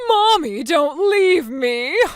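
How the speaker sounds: put-on slow, whiny, babyish little-kid voice. Mocking the other speaker's earlier pleading: mock whining like a baby. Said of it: "you were whining like a baby".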